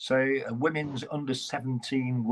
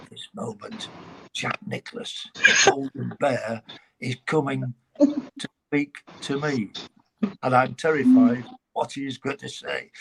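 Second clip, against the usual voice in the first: on-air commentator's stage whisper; 4 dB louder than usual. Retelling own live golf commentary on radio: imitating whispered commentary. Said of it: "I'm whispering when all of a sudden".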